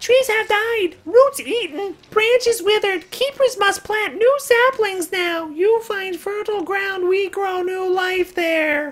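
very high, squeaky vegetable creature voice. Speaking as a talking vegetable to the group, in a vegetable creature voice. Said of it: "I approve of the vegetable voice".

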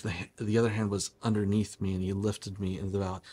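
ordinary delivery

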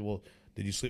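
usual speaking voice

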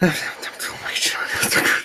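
soft, quiet, whispered complaining lament.

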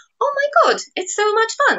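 very high, delighted, thrilled squealed exclamation.

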